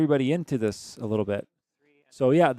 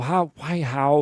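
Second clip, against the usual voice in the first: stumped, baffled, confused, lost-sounding voice. Retelling a puzzled opponent scratching her head: imitating a baffled player. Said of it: "Basil scratching her head going".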